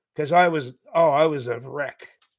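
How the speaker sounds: ordinary talk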